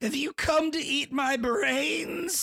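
put-on very high, drawn-out, unhinged crazy yell. Retelling a scene where a guy comes out; imitating crazed yelling. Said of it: "He's like yelling all crazy".

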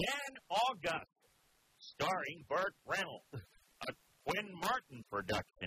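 slow high announcer voice. Recalling how an old detective show's credits were read out: imitating a tv credits announcer. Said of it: "the voiceover would read out the credits for you".

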